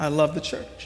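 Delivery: quivering voice. A speaker stands to declare a conviction, with a quivering voice. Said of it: "with quivering voice".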